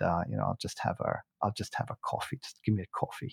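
soft, near-whispered, offhand tone. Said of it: "And he said".

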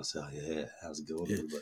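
very quiet, low, hushed, seductive sultry voice. Opening a podcast, the speaker greets the others: sultry voice. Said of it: "I kind of got the sultry voice going though".

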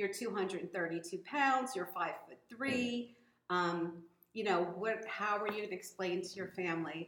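ordinary talk, nothing marked

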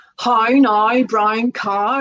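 Northern Irish pronunciation. Explaining how a Northern Irish accent comes across, in a Northern Irish accent. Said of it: "a Northern Irish accent would normally come across as".

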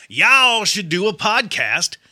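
put-on loud, slow Southern drawl and twang. Speaker voicing the message listeners should post, in a put-on southern twang. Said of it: "Let me throw in my Southern twang".

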